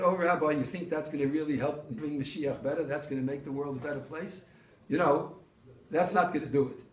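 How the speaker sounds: teasing, needling sarcasm, good-natured, without malice. Retelling what a person said about a fine point: imitating a sarcastic remark. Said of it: "in a sarcastic sort of way".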